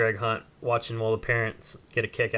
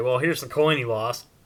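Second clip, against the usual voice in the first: play-acted, mildly sarcastic, wry delivery. Retelling holding up a found coin: retelling a sarcastic remark. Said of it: "kinda sarcastically".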